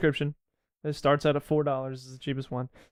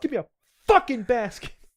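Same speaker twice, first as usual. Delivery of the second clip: pretend, acted-out yell, much higher pitched; 7 semitones higher, 3 dB louder than usual. Speaker acts out how they'll yell at their grandma, acting out a yell. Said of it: "I'm gonna be yelling at her".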